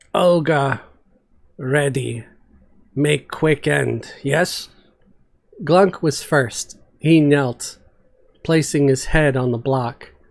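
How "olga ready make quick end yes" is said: slow, deep, rumbling, broken speech. Narrator reads Olga as she faces the executioner's block, rumbling Olga voice. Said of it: "[name] hefted her bone spear, a true smile stretching her face for the first time in days. / [name] rumbled from the corner, / But [name] agrees. This is bad death. No glory, no battle, just chop. [na".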